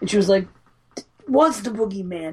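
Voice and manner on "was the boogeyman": acted sobbing, distraught, tearful blurt. Retelling how a crying, distraught character says a line: imitating a distraught, crying character. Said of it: "She's fucking all distraught, been through hell".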